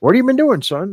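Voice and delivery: put-on high, elderly, fatherly old man voice. Retelling a chat with his father, who is in his eighties, impersonating his elderly dad. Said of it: "that's my impersonation of him".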